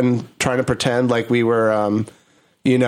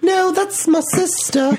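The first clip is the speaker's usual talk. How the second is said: put-on high, slow, piping little British kid voice. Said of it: "two little British kids".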